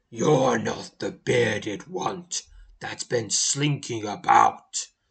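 deep, low, rumbling giant voice. Narrator reading the foremost giant's line, in a deep rumbling giant voice. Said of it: "his deep, rumbling voice".

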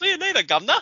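put-on Cockney accent. Imagining how a character should have said goodbye, in a Cockney accent. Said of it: "maybe he should have pulled the Cockney accent".

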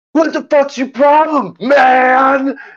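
play-acted very high-pitched, stretched-out, drawn-out yell. Retelling what a man yelled at the speaker after turning to face them; retelling a man's yell. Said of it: "and yells".

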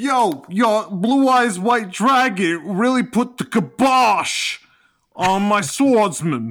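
put-on very loud, high, belted Brooklyn accent. A fan describing a favorite Yu-Gi-Oh character quotes him: Joey Brooklyn accent impression. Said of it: "got that Brooklyn accent".

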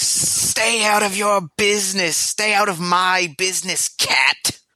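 high, sibilant, hissing creature voice. Something hissing outside the door warns the cat: hissing voice. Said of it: "you hear a hissing".

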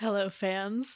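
scratchy raspy voice. A new guest greeting the podcast's fans, raspy voice. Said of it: "She came in with like a raspy voice".

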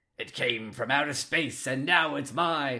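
movie trailer announcer narration voice. Quoting a game character talking to his pet, in movie trailer guy voice. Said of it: "he's doing like movie trailer guy voices".

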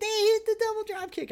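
put-on high-pitched commentator scream. Retelling how the commentator called the double drop kick: imitating Caprice screaming. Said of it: "he's screaming".

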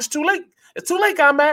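very high-pitched taunting voice. Retelling what he said as he came by, imitating Swilling's high voice. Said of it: "He had a high voice too".

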